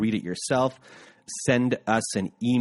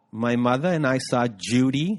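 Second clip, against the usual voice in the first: slow, deliberate put-on older woman's voice; 2 semitones higher than usual. Telling about seeing a movie together, imitating my mother. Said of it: "That's my imitation of my mother".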